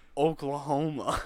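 imitated half-asleep voice. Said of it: "just in his half-sleep state".

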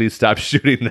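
put-on embarrassed pleading voice. Retelling a film scene, quoting an embarrassed plea to stop filming: imitating Zach Galifianakis embarrassed. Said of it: "you can tell he's super embarrassed and has his hand out like".

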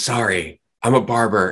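put-on giggle while talking. Retelling an excuse given before walking off: imitating giggling speech. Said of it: "she kinda giggles and says".

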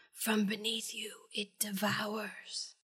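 warped, very soft, hushed, slow distorted voice. Recapping a show episode, voicing a dying woman turning to the camera: distorted voice. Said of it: "says in a distorted voice".

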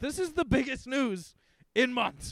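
frantic, agitated blurt. Answering why they sound frantic: frantic. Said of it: "I am frantic".

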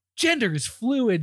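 high-pitched, condescending tone.

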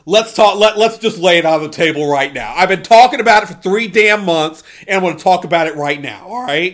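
worked-up, all-in, fired-up declaration. Arguing tournament picks with another speaker, the speaker is fired up. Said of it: "I'm a little fired up".

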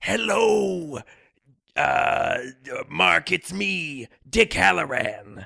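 cool, raspy voice, very slow and drawn out. Describing how the actor playing Dick Halloran sounds: Scatman Crothers impression. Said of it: "kinda raspy voice, and he kinda sounds like".

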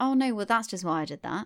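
put-on casual, breezy, offhand, throwaway delivery. Imitating a man in an interview explaining a crime: imitating a nonchalant tone. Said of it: "he says it so, like, nonchalantly".

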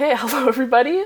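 high-pitched speech broken by laughter. Opening the first podcast episode, laughing while talking. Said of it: "I'm laughing".

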